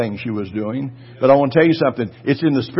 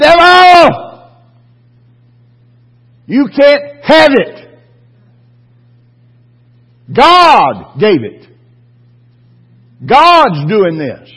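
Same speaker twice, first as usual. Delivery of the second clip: very loud, high, shrill, swooping, drawn-out holler; 11 semitones higher, 10 dB louder than usual. Retelling going out in the backyard to confront the devil: retelling his own yelling at the devil. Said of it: "I've yelled at the devil before".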